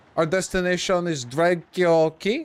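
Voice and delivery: put-on French accent. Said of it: "the captain literally has, like, a French fucking vernacular".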